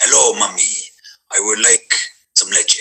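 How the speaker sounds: smooth, languid voice, words drifting out. Imagining him just born, asking mommy for leche: languid smooth Antonio Banderas voice. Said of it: "he's very languid".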